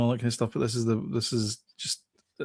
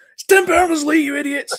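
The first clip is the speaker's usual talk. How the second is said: very high, shrill, very loud shouting; 8 dB louder than usual. Recalling watching the opening ceremony commentary, retelling a shout at the TV. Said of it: "Shouting at the".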